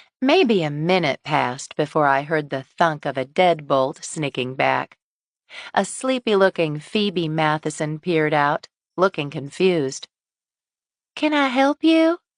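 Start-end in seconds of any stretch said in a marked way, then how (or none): 11.1-12.2 small, thin, very high-pitched little voice. A woman answering her door to a caller, in a small, thin voice. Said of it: "in a small, thin voice".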